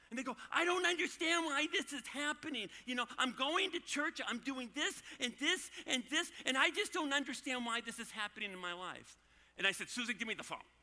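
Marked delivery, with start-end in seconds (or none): 0.5-9.1 acted-out, high, whiny, put-upon whining. A parent retells their kid whining on the phone; imitating whining. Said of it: "and you hear this whining".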